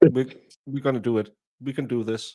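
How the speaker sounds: flat, expressionless, resolute deadpan delivery. Retelling a viral video of a father after a positive pregnancy test: imitating a stone-faced deadpan. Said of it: "totally stone-facing".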